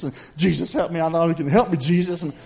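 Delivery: put-on crying, scared, pleading voice. Speaker retells being scared alone in the house, retelling a crying plea. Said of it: "I'm crying".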